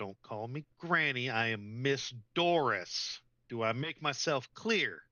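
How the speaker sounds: slow, menacing, intimidating, threatening tone. Voicing Miss Doris, who scolds a player for calling her Granny: intimidating. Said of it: "She's gonna roll an intimidation on you".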